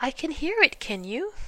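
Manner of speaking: anxious, fretful tone. Reading Piglet asking Christopher Robin as they get near: anxious. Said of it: "said Piglet anxiously".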